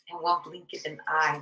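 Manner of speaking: normal talking voice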